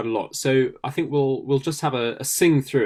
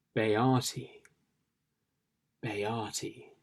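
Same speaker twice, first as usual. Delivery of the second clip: slightly mysterious tone with more breath; 3 semitones lower, 10 dB quieter than usual. Demonstrating a word for listeners to try at home, slightly more mysterious. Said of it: "in a sort of slightly more mysterious way".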